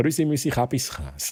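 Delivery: Swiss German accent. Greeting people by name, slipping into a Swiss German accent. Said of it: "das war äh, Schweizerdeutsch".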